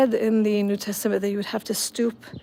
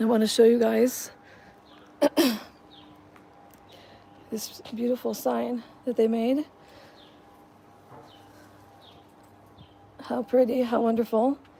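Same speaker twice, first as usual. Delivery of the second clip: husky, raspy voice. Showing viewers around the garden tomb, hoarse voice. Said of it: "Excuse my hoarse voice".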